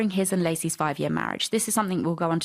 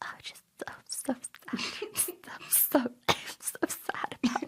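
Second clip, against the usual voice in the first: fake-sad, pitiful, sick-sounding whisper; 7 semitones higher, 9 dB quieter than usual. Mocking Scott's voice on a recording they are listening to: mock sick-day voice as Scott. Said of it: "that voice you use when you call in sick to work".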